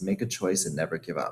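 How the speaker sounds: normal talking voice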